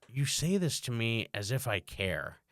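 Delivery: deadpan, dead serious, slow delivery. Retelling his reply to a kid playing a game he shouldn't, deadpan serious. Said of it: "I was said it so deadpan serious".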